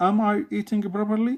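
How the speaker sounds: rising tune climbing on "properly". Intonation lesson, question said with rising intonation on properly. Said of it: "The intonation is rising up".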